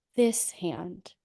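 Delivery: calm, soft, gentle and sweet as can be. The speaker recounts what she said to him, acting it out: retelling a gentle, sweet request. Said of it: "as gently and calmly and sweetly as I possibly can".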